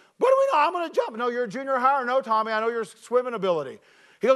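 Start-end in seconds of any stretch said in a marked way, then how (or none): 0.2-1.2 mock squeaky male voice, much higher, louder, faster. Retelling what a man with a speech impediment said to him, imitating Tommy's high squeaky voice. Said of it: "he had a high, squeaky voice".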